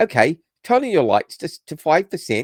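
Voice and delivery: put-on horrible Australian accent. Retelling a voice assistant's misheard reply: horrible Aussie accent. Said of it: "it's a horrible accent".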